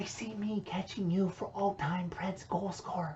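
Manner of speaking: very quiet, hushed, secretive whisper. Answering the other speaker, who asked why he is whispering; whispering. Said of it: "why are you whispering".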